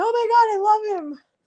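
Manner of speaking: put-on very high, besotted squeal, "my" drawn out. Retelling how the delivery man reacted to the dog: imitating someone going nuts over a dog. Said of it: "he went, like, nuts".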